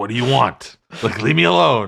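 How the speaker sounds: loud, impatient, fed-up dismissive tone. Retelling a famous interview, doing a Harrison Ford impression. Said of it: "that's my impression of Harrison Ford".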